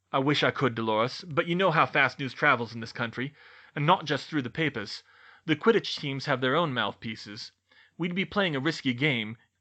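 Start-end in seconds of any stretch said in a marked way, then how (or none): none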